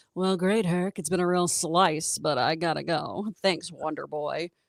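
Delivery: deep, slow, low-register voice. Describing a Broadway actress's voice, imitating her low register. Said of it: "really great low register where she's just like".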